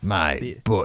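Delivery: dark sci-fi villain voice, like a film villain. Quoting the Emperor: Emperor voice. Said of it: "like the Emperor".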